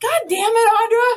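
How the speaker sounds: very high yelling through laughter. Retelling closing the door again, the speaker reenacts yelling at someone while laughing. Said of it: "now i'm just like yelling at audra but like laughing".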